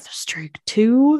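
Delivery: mock whisper muttered under the breath. Retelling a date scene where he says a line out of nowhere: retelling a whisper under breath. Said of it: "he kind of just whispers like under his breath".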